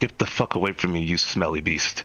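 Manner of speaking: whispering. In a tabletop game, a character speaks to another character, whispering. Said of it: "whisper to him".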